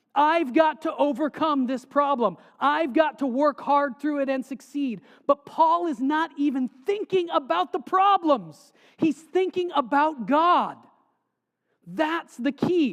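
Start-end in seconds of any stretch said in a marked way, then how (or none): 5.2-12.9 loud, raised-voice yelling delivery. Speaking to listeners about faith, then apologizing for yelling; yelling. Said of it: "I'm not yelling at you".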